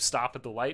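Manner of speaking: normal talking voice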